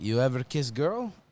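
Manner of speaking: fake foreign accent with broken English. Retelling meeting Sabrina, quoting her question to him: imitating Sabrina's broken accent. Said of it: "I'm actually doing the fake accent".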